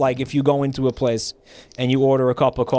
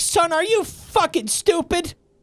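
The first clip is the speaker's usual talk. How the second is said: put-on high, pitched-up old woman voice, flipping out. Retelling how an old customer flipped out over Sanka: imitating an old lady flipping out. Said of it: "flipped out on me".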